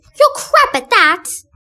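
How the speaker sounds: put-on shrill, high, sassy, bratty childish voice, belted out. Cast member describing the character Debbie, demonstrating Debbie's annoying childish voice. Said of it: "with an annoying childish voice sounding like this".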